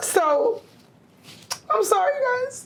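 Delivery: very high, crying, slow and drawn-out voice. Talking about past relationships while crying. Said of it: "I'm sorry I'm getting emotional".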